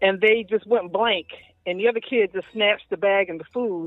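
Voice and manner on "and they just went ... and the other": usual speaking voice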